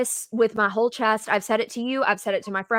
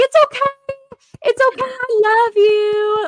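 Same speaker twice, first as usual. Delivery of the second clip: shrill, very high, very loud screaming; 14 semitones higher, 9 dB louder than usual. Recalling a player looking upset, the speaker retells screaming at the tv. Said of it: "I literally I was screaming at my T V".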